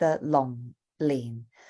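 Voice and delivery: both syllables of long lin dropping to low falling tones. Explaining the tones of a name, low falling tones on long lin. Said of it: "two low falling tones".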